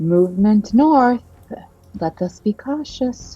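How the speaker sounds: whispering. Voicing a character in a role-playing game, whispering. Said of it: "he he like whispers".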